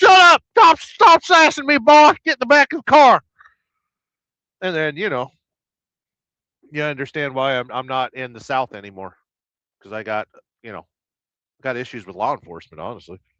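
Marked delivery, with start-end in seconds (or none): 0.0-3.2 shrill, very loud, high-pitched cop yell. Retelling being pulled over, speaker acts out the officer, imitating a yelling cop. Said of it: "And you'd be like".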